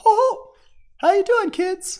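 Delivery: squeaky voice, high, loud and slow. Recording a voice sample before editing in fades, greet the kids in a high-pitched Mickey Mouse voice. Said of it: "it's like my Mickey Mouse voice".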